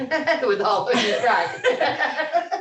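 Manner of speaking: high-pitched, laughing delivery.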